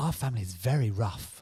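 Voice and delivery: put-on refined, posh upper-class accent. Retelling what a posh mum used to say: imitating posh mum. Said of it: "as my posh mum used to say to me".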